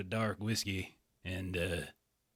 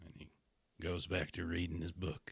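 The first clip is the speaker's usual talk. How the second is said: ordinary delivery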